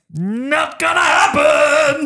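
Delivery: high, slow, drawn-out yell.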